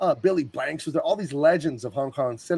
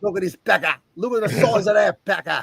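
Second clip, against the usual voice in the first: bad put-on Australian accent, loud and high; 6 semitones higher, 5 dB louder than usual. Joking about a crocodile: shit australian accent. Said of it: "shit Australian accent".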